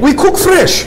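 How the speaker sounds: high-pitched, thick Russian accent.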